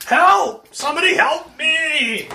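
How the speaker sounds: very high, loud, shrill shouting. A game master voices someone around a corridor bend: shouting for help. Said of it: "you hear shouting".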